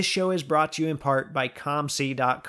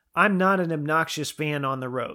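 usual speaking voice

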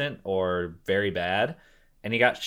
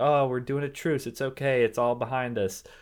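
false, pretend-nice, fake friendly tone; 4 semitones higher than usual. Retelling a movie scene where he pretends to be nice: imitating someone faking niceness. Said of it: "pretends to be nice".

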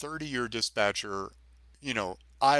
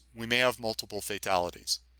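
normal talking voice

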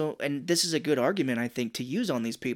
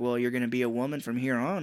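normal talking voice

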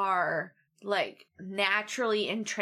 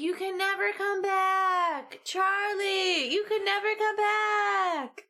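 mock desperate pleading, very high, slow, stretched out; 11 semitones higher than usual. Retelling a scene with another speaker: imitating a pleading voice. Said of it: "pleading with him to not do this".

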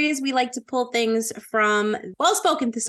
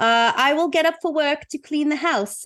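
put-on British accent, higher pitch; 4 semitones higher than usual. Making up an example sentence for a phrase, in Millie's British accent. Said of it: "I don't know why she has a British accent".

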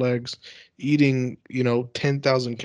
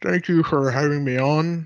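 voice squeezed through huge puffed cheeks; 3 semitones higher than usual. Imagining being a hugely fat guest, joking: puffed-cheek voice. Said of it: "my voice would probably sound something like".

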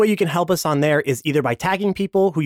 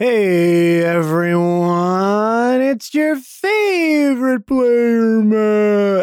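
very slow, drawn-out whale voice, lingering on "man"; 5 semitones higher, 4 dB louder than usual. Greeting everyone as their favorite player, Dory talking like whale. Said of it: "I sounded like Dory talking like whale".

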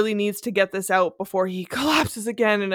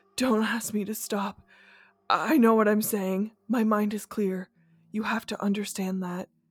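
low, almost whispering voice, quieter; 4 dB quieter than usual. Reading a dramatic novel aloud, a weak coma patient speaks: low, almost whispering voice. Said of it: "he says in his low, almost whispering voice".

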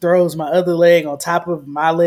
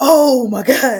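high, wailing, pained scream; 7 semitones higher, 4 dB louder than usual. Retelling how she screamed when her hurt leg was thrown on the x-ray table, retelling a pained scream. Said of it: "like screaming".

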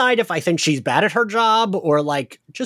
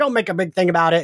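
mocking dismissive voice. Retelling an episode, acting out the father: imitating a MAGA dad. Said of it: "maga dad, who's like".

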